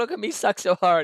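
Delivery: very high, giggle-laced, taunting jester voice. Retelling how the death jester kept mocking the player: imitating a giggling jester. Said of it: "giggling the entire time".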